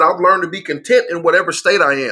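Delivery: ordinary talk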